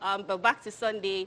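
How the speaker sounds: ordinary talk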